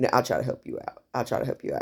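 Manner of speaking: hushed, whispered voice. Retelling the salesman's words about the furniture: imitating someone whispering. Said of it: "he started whispering to me".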